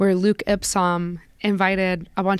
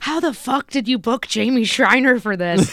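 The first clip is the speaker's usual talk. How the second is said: mock, mild, half-exclaimed, called out; 4 semitones higher than usual. Retelling what someone said into the microphone: imitating someone saying it loudly. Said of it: "says really loudly into the microphone".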